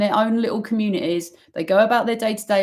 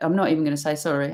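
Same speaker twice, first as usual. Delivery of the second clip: normal talking voice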